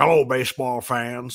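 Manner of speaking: very deep, sunken announcer voice. Recalling a Sunday Night Baseball announcer: Jim's very deep voice. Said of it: "he had the deepest voice ever".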